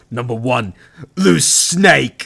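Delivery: slow British narrator voice. Imitating a countdown narrator announcing a list entry: British countdown narrator impression. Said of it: "that was such a good impression".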